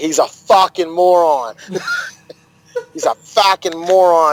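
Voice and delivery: put-on Boston accent. Speaker repeats a line he said wrong, this time in a Boston accent. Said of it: "I gotta say it in the Boston accent".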